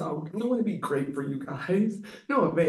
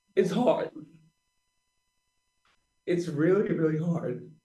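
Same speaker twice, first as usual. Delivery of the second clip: speaking through tears, crying. Speaking about teammates, the speaker starts crying: crying. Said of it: "I don't even know why I'm crying".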